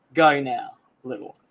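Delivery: acted-out, mock intimidating tone. Retelling stepping between them in heels, acting out an intimidating warning to the little one. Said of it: "you've still got that intimidation factor".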